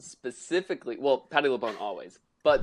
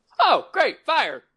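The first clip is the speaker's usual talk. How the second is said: very high, loud theatrical stage delivery; 7 dB louder than usual. Quoting a favorite actress's funny line: imitating Patti LuPone's line delivery. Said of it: "That line delivery".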